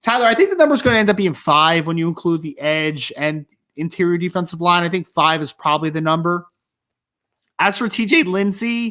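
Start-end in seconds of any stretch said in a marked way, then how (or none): 7.6-8.9 slight voice crack, high pitch, very slow. Answering a question about the defensive line, the speaker has a subtle voice crack. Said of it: "as I had a subtle voice crack there".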